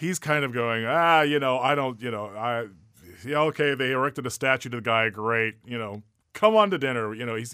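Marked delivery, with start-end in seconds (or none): 0.8-7.1 acted, loud, snide, sneering, facetious sarcastic tone. Acting out Don Giovanni inviting the statue to dinner: imitating Don Giovanni's sarcasm. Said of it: "he's being very facetious and, and sarcastic and, and snide".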